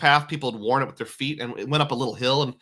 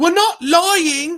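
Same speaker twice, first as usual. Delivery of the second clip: put-on very high, raised, sassy British accent; 7 dB louder than usual. Retelling what a girl said to a cashier, in a very British voice. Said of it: "in a very British voice".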